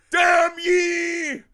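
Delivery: very high-pitched, loud screamed delivery. Retelling a film character's curse: Charlton Heston-style curse. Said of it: "It was like so Charlton Heston".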